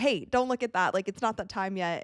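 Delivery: imitated sarcastic, teasing tone. Retelling joking with a player who started scrolling an ipad: retelling a sarcastic joke. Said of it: "I was joking, like, being sarcastic".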